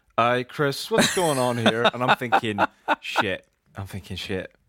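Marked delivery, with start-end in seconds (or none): 0.2-1.9 put-on, generic Northern Irish accent. Quoting someone's question in a northern irish accent. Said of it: "the one accent you do for all people from Northern Ireland".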